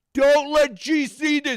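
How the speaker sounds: loud, high-pitched yell, big. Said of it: "you're yelling to Jed".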